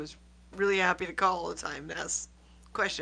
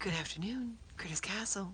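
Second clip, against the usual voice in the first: play-acted, perfectly polite, courteous phone voice; 2 semitones higher, 7 dB quieter than usual. Recalling answering the phone to customers in one's twenties, recreating perfect polite phone voice. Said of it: "I'd always answer the phone in my perfect polite voice".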